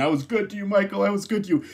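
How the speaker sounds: play-acted, desperate, high-pitched pleading beg. Recapping a show scene, quoting a doomed character while imitating him begging. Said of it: "he's like begging and saying".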